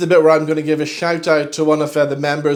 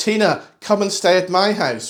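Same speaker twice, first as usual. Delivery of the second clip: mild, would-be clever heckling call, called out; 4 semitones higher than usual. Recounting an audience member who called out during an emotional stage scene, retelling a heckler's shout. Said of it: "and shouts out".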